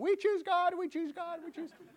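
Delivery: high, loud, desperate screaming.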